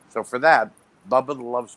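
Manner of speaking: ordinary talk, nothing marked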